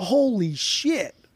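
high, sudden, mock blurted exclamation. Speaker retells a man pulling out a record, retelling a loud exclamation. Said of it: "like loudly goes".

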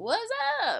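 very high, cracking, breaking voice. Greeting everybody at the start of the episode: voice cracking. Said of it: "I cracked on my "What's up?"".

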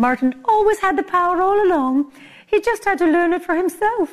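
badly done, very high, sweet good witch voice. Closing a story, the speaker quotes the good witch: bad Glinda impression. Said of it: "worst impression ever".

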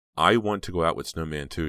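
plain

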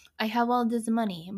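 put-on bad, failed Spanish accent. Quoting a rich billionaire character from a movie, in a bad Spanish accent. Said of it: "but that's not a Spanish accent".

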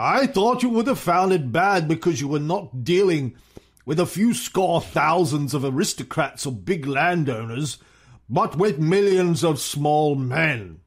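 put-on acted old statesman voice. Reading aloud Churchill's words to Stalin about collective farms: Churchill accent. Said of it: "this is my Churchill accent".

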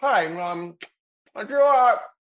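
put-on full-mouth talking. Imitating a brother at dinner: imitating talking with mouth full. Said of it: "just talks with his mouth full all the time".

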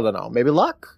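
ordinary talk

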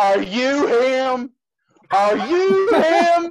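very loud, very high, shrill, rising, repeated. Retelling a stranger calling out in an airport, retelling a very loud voice. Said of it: "this very loud voice going".

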